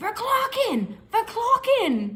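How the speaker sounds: verklokken screamed high and drawn out long.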